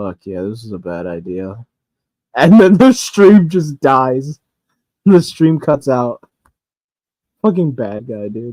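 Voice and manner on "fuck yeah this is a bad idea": low, hushed grumble, muttered, half swallowed. Retelling how a streamer sounded on a dead stream: imitating Tiberio muttering under his breath. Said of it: "you could hear him mutter under his breath".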